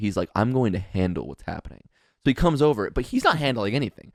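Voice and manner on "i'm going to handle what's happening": full fatherly take-charge dad voice. Retelling a friend stepping in to handle trouble: imitating full dad mode. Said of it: "full dad mode".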